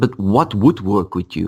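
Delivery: ordinary talk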